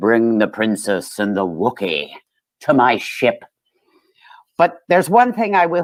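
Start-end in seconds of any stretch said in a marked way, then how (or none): 0.0-3.4 deep put-on villain voice. Joking about a hoarse voice, quoting in Darth Vader voice. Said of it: "transitioning into Darth Vader".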